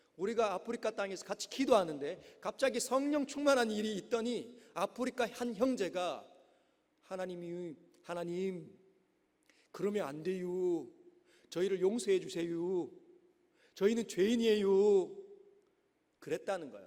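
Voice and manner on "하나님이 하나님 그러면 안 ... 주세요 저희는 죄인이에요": put-on Korean Chungcheong regional accent. Retelling a brother's prayer from a missionary's testimony: imitating Chungcheong dialect. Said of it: "갑자기 충청도 사투리가 들리는데".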